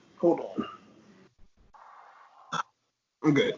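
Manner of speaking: weepy, tearful voice, crying through the words. Wrestling podcast host stopping mid-recap as a co-host asks, sounding like crying. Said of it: "Are you crying?".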